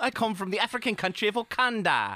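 put-on high-pitched small British boy voice. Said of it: "He also sounds like a small British boy".

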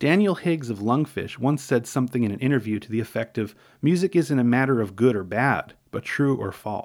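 ordinary delivery, nothing marked

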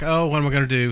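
ordinary talk, nothing marked

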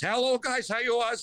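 put-on very high-pitched old Ukrainian accent. Recalling his radio call-ins, the speaker does his character, Uncle Gus old Ukrainian voice. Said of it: "talk like this Ukrainian".

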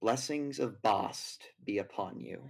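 words spoken in a very soft, low murmur. A game narrator voices a woman who looks back at the player, very softly spoken. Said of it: "says some words very softly".

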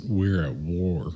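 low, slow demonic voice. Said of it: "how the demon describes it as".

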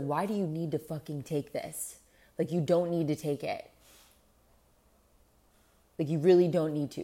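put-on angry scolding. Speaker retells how they used to scold themselves: mock-angry self-scolding. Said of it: "I would get so angry that I was like".

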